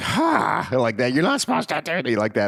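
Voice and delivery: bad, high-pitched scolding voice. Retelling how a mother scolded her husband: imitating a scolding mother, terrible voice. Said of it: "that's a terrible voice for her".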